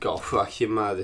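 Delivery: terrible, badly done fake Boston accent, low pitch. Joking about people from different cities, one speaker imitates a Bostonian: terrible Boston accent. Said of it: "That was a terrible accent".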